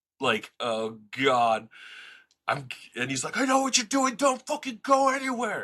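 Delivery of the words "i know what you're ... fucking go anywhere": screamed at a very high pitch. Speaker retells a man confronting them while getting mail, imitating a man screaming. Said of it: "screaming at me".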